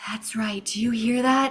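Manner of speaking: whispering. Asked what they are doing, a player keeps talking, whispering. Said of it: "This is a ten out of ten whisper".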